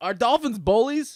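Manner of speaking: sudden, high, yelled. Asking the other speaker a question, yelling. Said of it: "Why are you yelling?".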